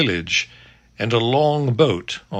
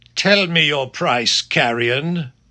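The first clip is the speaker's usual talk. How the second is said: stern, severe, higher; 4 semitones higher than usual. Reading a story aloud, voicing the lord: stern. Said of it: "said the lord sternly".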